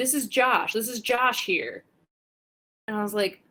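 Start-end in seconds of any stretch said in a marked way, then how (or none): 0.0-1.8 higher, put-on screaming man voice. Retelling a moment in the ring when Jimmy broke kayfabe: imitating Jimmy screaming. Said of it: "Jimmy's screaming".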